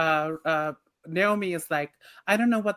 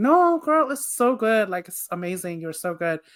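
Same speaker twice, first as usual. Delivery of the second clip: put-on slow, gushing, over-the-top effusive voice; 2 semitones higher than usual. Recalling a friend group praising a classmate's writing, imitating gushing reassurance. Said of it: "everybody would be like".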